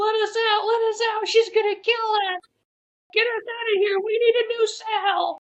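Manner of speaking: very high, frantic, panicked squealing. Retelling two grown men banging at a cell door, in a high-pitched voice. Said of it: "high pitched voices".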